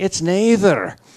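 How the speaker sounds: put-on high-pitched, loud Scottish accent. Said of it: "the Scotchman settles it by saying".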